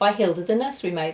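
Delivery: ordinary delivery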